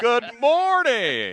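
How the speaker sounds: very loud, very high, booming, pumped-up energy. Describing a parade marcher with a megaphone: imitating a hyped motivational speaker. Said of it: "it's that type of energy".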